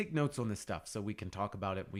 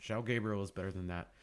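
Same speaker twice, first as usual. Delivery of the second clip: plain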